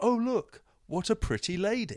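very high, slow, top-of-the-voice shouted exclamation. Retelling how a care home audience member suddenly piped up, imitating someone shouting out. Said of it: "just shouted out".

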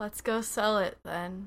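dozy, half-asleep, drowsy voice. Player speaking as Trell to another character: sleepy. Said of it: "kind of sleepily".

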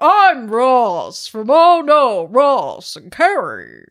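very loud, booming, big swooping announcer radio voice. Showing your co-host how he should have spoken at the conference Q&As, in a booming radio voice. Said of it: "your booming radio voice".

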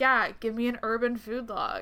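put-on sarcastic aside. Speaker acts out what they'd say on seeing a sign, retelling a sarcastic remark. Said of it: "I would then sarcastically be like".

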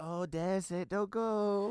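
mock voice, high, slow, loud and drawn out.

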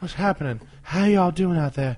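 put-on creepy old man voice. A speaker greets listeners once recording starts, in a Herbert from Family Guy voice. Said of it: "it sounds like the old man from".

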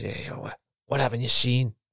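put-on Scottish-accented speech. Retelling how a man stopped the video they were watching and asked the group; Scottish accent. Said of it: "and in a Scotch accent".

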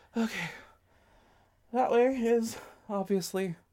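winded, gasping, panting, breathless, pitched high. A player character with the Minotaur behind her, speaking out of breath. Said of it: "I'm really out of breath".

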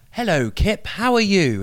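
put-on old-school London accent, very high, slow. Retelling how people greet Kip, in an old-school London accent. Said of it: "that's a really good old school London accent".

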